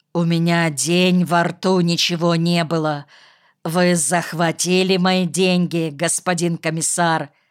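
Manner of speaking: ordinary delivery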